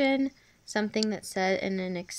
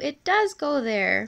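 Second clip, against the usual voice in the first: really excited, high-pitched exclamation; 3 semitones higher, 4 dB louder than usual. Explaining punctuation and reading the second example aloud, in a really excited tone. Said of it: "in a really excited tone of voice".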